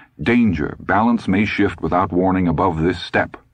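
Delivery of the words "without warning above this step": ordinary delivery, nothing marked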